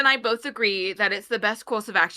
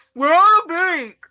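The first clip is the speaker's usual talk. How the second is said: very loud, high-pitched, speaking with a full mouth; 8 semitones higher, 9 dB louder than usual. Voicing a character who blurts out news after stuffing in a biscuit: said through a mouthful of biscuit. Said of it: "through the biscuit".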